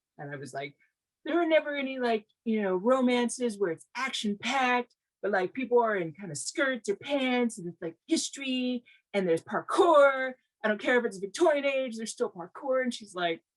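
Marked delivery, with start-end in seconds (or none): 1.3-12.9 high-pitched, exasperated, complaining griping rant. Retelling a complaint to a mentor: retelling own complaining. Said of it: "I was complaining to one of my mentors".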